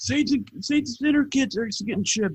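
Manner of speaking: play-acted very high, giddy, gushing, overjoyed voice. Retelling the other speaker's happy text message: imitating someone excited and happy. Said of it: "when you text me how fucking happy you were".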